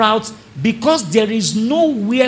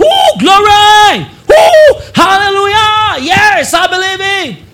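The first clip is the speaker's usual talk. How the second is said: high, loud, joyful shout. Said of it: "They shout in church".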